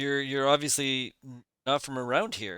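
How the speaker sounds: usual speaking voice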